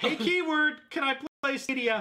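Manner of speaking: mock shrill yelling. Picturing asking a coffee screen to run Stadia: pretend yelling at a machine. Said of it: "yelling at it".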